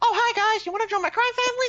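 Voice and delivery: very high, loud, squeaky voice. Mocking squeaky-voiced mob dons, speaker does an impersonation: Mickey Mouse-style mobster voice. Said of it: "I can do a perfect impersonation".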